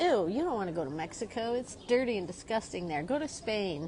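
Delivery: ordinary delivery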